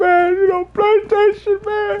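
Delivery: put-on very high, weepy, sobbing wail. Retelling what a person said in his videos: imitating someone crying. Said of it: "He was crying in them videos".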